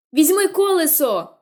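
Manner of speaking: urgent, loud, high shouting. Jem, to the trembling narrator who has just got up, yelling. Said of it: "волав Джем".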